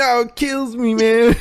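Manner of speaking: very high, slow, lispy voice. Quoting a boxer on kale: Mike Tyson lispy voice. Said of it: "In his little lispy voice".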